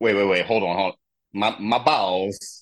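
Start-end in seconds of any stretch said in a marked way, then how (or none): 1.3-2.6 put-on Eastern European accent. Trying out an accent for the other speaker, it turns into a little Borat accent. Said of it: "that's a little Borat going on there".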